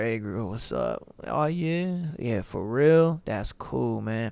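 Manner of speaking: very low, slow, bored, half-asleep drawl. Showing how to talk to a girl on the phone, put-on uncaring sleepy tone. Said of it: "but I'm sleepy" kinda tone".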